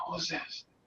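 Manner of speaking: very soft, hushed, very quiet whisper. Retelling a phone call where the woman answered: imitating someone whispering. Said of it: "she started whispering".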